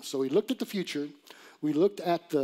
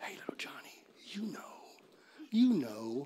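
sly, hushed, breathy whispering parrot voice; 7 dB quieter than usual. Telling a joke, the store parrot calls to a boy walking by, parrot whisper. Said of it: "the parrot whispers".

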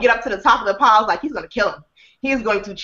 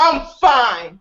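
ordinary talk, nothing marked

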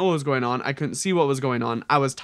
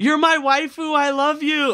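very high, blurted-out shout like a fan; 12 semitones higher, 4 dB louder than usual. Retelling the same guy yelling out in the crowd: imitating someone yelling out. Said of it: "the same guy just yells out".

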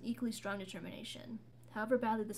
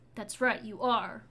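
sharp, cutting, harsh, raised tone; 8 dB louder than usual. Narrator reads a woman answering a man about his part in a death; harsh. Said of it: "Mara said harshly".

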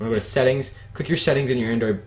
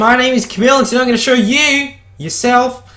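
terrible fake Australian accent, very loud and high; 14 semitones higher, 11 dB louder than usual. Opening a how-to video by introducing herself in a terrible australian accent. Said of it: "It was a terrible Australian accent".

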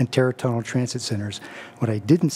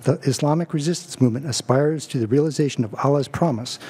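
usual speaking voice

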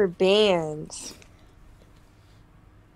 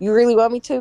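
plain

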